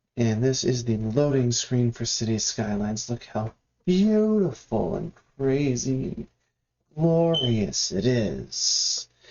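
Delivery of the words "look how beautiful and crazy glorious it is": sarcastic gushing, swooping and drawn out. A streamer waiting on a City Skylines loading screen, sarcastic. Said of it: "that's completely sarcastic".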